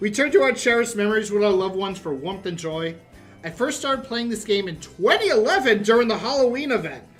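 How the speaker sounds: plain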